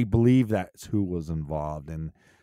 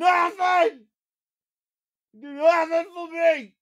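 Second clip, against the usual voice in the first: high, loud mock yelling. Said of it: "I'm just gonna start, like, yelling every episode".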